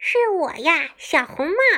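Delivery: high-pitched voice with pinched throat. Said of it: "狼捏着嗓子回答".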